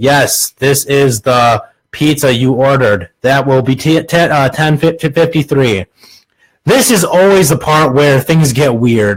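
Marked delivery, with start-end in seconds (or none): 0.0-5.9 expressionless, dead-level monotone with no inflection. As the pizza delivery man answering the woman at the door, monotone voice. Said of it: "You in a monotone voice say".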